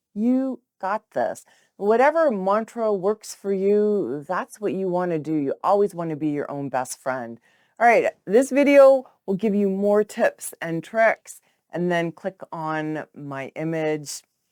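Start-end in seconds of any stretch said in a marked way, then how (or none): 0.2-1.5 kind, tender, gentle and caring tone. Coaching listeners on a self-talk mantra, saying it in a gentle, caring tone. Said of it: "saying it in a gentle and caring tone of voice".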